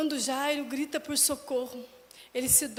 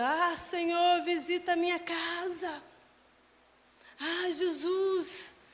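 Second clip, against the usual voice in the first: high-pitched cry with the word casa drawn out; 6 semitones higher than usual. Crying out to the Lord to visit the house, as the father did: shouting like Jairo. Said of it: "Eu estou como Jairo gritando".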